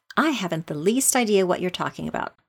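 ordinary delivery

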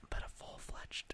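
speaking in a whisper. Mid-conversation about a game, the other person asks why; whispering. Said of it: "Why are you whispering?".

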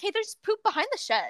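easygoing, matter-of-fact tone. Telling a story, the speaker imitates another kid who came up to him, imitating a calm kid. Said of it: "he said it so like calmly".

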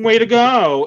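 mock sarcastic, loud and high.

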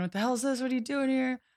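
acted, high-pitched, barging-in screamed outburst. Retelling a comic scene where the scientists barge in: imitating someone screaming. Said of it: "screaming at Abe".

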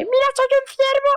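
put-on very high, over-excited, thrilled small-child voice. Retelling a video sent on christmas morning, mock-excited three-year-old voice. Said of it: "Pero súper ilusionado".

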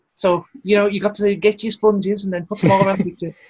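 put-on Liverpool Scouse accent, very high. Show listeners how a man from Liverpool sounds, in a Scouse accent. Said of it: "He sounds a little bit like this".

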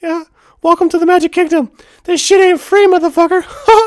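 high, loud squeaking voice. Retelling a Magic Kingdom trip, the speaker shakes people down in the Mickey Mouse voice. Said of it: "doing the Mickey Mouse voice".

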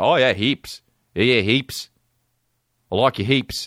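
put-on Australian man's accent. Mocking how an Australian guy talks to a girl: imitating an Australian guy. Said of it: "talk to a fucking Australian guy like".

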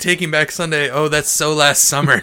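loud, mock-smug delivery with put-on smugness. Speaker retells what they said loudly while waiting in a concert line; retelling a smug loud remark. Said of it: "so smug, just the smuggest".

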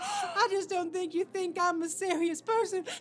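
high, tearful, words pushed through crying. Arguing with someone in a scene, crying. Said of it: "Please don't cry".

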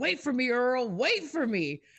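mock, high-pitched, screamed-out call. Retelling what a neighbor was heard yelling at night: imitating someone screaming. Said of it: "she starts screaming".

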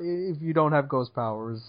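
plain

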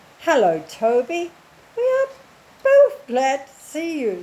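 squeaky, high-pitched voice. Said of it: "said in a high, squeaky voice".

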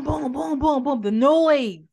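high, loud, noisy booming voice. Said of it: "He's not in the boom".

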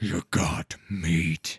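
deep, rumbling gravelly monster voice. Narrator voicing the northern troll Yeddu, in a rumbling, gravelly Yeddu voice. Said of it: "said Yeddu with a rumbling, gravelly voice".

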